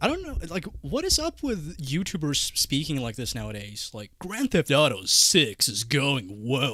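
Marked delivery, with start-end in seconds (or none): 4.2-6.8 slow, epic movie-trailer announcer narration voice. Mocking how YouTubers speak nowadays, imitating a movie trailer voice. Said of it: "what is this trailer voice you're putting on".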